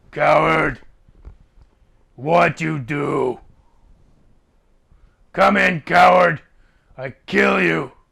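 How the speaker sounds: orc voice shouting. Voicing a creature behind a door that calls someone a coward: orc voice shouting. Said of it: "It says".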